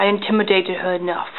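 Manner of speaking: plain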